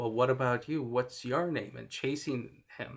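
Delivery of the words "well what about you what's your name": play-acted teasing, jeering, taunting tone. Retelling a film scene where the mystery man taunts Fred: imitating a mocking tone. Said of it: "in that same kind of mocking tone".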